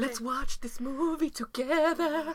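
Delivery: put-on high, laid-on Mexican accent. Recommending a scary movie for Halloween, in a Nacho Libre accent. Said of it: "What accent was that?".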